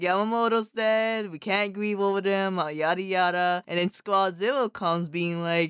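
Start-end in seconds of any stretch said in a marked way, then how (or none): none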